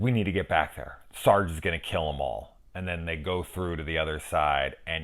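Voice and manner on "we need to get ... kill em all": ordinary talk, nothing marked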